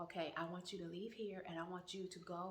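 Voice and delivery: hushed voice. Retelling what an interviewer said after the interview: whispering. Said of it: "Why am I whispering?".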